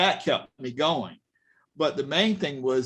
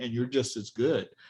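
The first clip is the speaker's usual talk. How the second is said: put-on whisper, quieter; 3 semitones lower, 4 dB quieter than usual. Retelling what a lady at a gallery told you: imitating a whisper. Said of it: "and she whispered to me".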